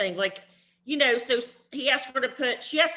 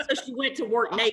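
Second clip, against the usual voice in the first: usual speaking voice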